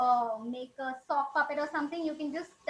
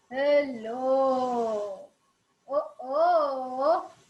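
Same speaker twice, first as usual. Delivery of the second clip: big, heavy, loud elephant-like voice, drawn-out "oh"; 5 dB louder than usual. Explaining how to give characters different voices, demonstrating a heavy, big voice. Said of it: "if you want to give a heavy voice".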